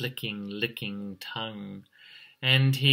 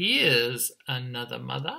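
plain reading voice

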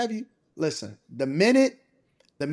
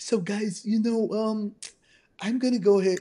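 put-on lisp, much higher pitch; 4 semitones higher than usual. Retelling a story, quoting what a man said, imitating a man's lisp. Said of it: "he was talking with his lisp".

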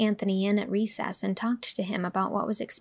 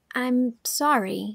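unsure, halting, hesitant, faltering words; 3 semitones higher, 3 dB louder than usual. Apologizing after being told someone was annoyed, faltering. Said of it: "faltered Anne".

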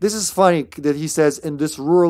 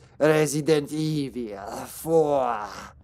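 put-on Spanish accent, "evil" stretched; 5 dB quieter than usual. Mocking the game's title announcer: imitating the Spanish-sounding title narrator. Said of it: "all Spanishy".

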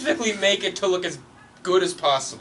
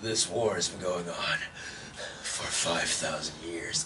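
winded, breathless, very low, very soft, hushed voice; 13 semitones lower, 10 dB quieter than usual. Mocking the voice acting they watched, imitating breathless voice acting. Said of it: "They all sound like they just went on a workout and then recorded their lines".

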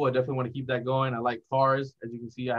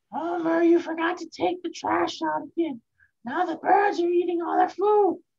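high-pitched nagging housewife voice; 4 dB louder than usual. Trying a voice after the other speaker's turn: Marge Simpson voice. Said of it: "a pretty sturdy Marge Simpson".

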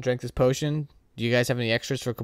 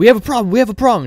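very loud, shrill, frantic top-of-the-lungs scream; 10 semitones higher, 13 dB louder than usual. Narrator voicing Halrex at the door with the captain down, Halrex yelling. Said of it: "And she yells".

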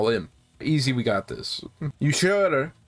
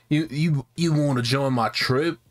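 clumsy, badly done put-on British accent. Voicing a game character's line while playing, in a bad British accent. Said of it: "I can't do a British accent".

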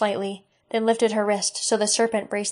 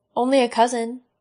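plain

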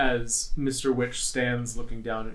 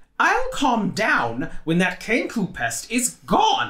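very high, shrill, swooping put-on voice; 10 semitones higher, 7 dB louder than usual. Reading a story aloud, voicing a character's reply in a high-pitched, shrill voice. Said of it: "in a high-pitched, shrill voice".

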